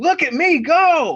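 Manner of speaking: very high-pitched, drawn-out, stretched shriek. Retelling what was screamed on catching someone: retelling a scream. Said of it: "just screamed".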